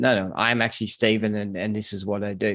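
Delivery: ordinary talk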